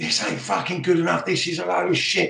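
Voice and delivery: put-on heavy, broad Scottish accent. Retelling an assistant manager banging his fists in front of young boys, in a broad Scottish accent. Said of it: "the broad Scottish accent".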